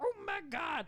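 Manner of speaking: very high-pitched, bad New York accent. Describing a scene where Tom Hardy's boss character reacts, bad Tom Hardy New York accent. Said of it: "The bad New York accent".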